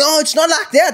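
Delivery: put-on very high, loud, girlish babbling voice. Retelling a girl's reply on a phone call: imitating someone babbling. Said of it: "girls trying to babble".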